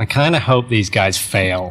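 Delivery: put-on American accent. Quoting a critical online post about the group, American accent. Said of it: "You do it in an American accent".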